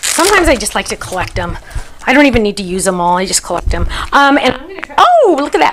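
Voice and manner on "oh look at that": sudden, high, excited, delighted yell. Speaker spots something she was looking for, letting out an excited yell. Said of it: "sorry, I didn't mean to yell".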